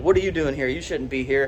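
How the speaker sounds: ordinary delivery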